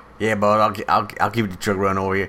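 put-on very loud, awful Louisiana accent. Voicing the driver asked to keep the truck running: bad Cajun accent. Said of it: "give me your best Cajun, boy".

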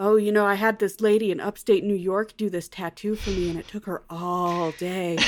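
flirtatious, sweet, playful. Retelling how Violet shows off her tattoo: flirty Violet voice. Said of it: "in her, like, flirty way".

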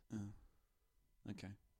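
soft, let-down, deflated, disappointed voice. Hearing the other person say they're agnostic, reacting disappointed. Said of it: "you sound really disappointed".

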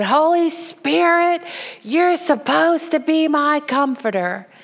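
put-on sassy tone, high. Retelling crying alone at bed time: imitating own sassy past self. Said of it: "with sassy, my little sassy self, saying".

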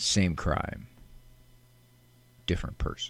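flat, whispered deadpan with no enthusiasm. Showing how a bumper one-liner for the program must be said: deadpan. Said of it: "you have to express that in a very deadpan way".

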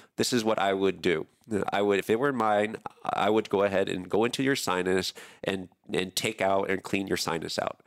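ordinary delivery

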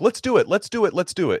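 very high, keen, eager repeated chorus, acted out. Retelling how the doctors answered about the surgery: imitating eager doctors.

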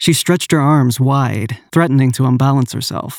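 plain reading voice

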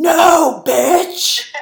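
very high, loud, furious, angry screaming.

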